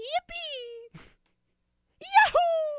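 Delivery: very high, loud, mock child whooping cheer.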